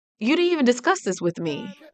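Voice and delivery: mock annoyed, irritated tone. Voicing a woman on screen upset with her partner: imitating someone annoyed. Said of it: "so annoyed with him right now".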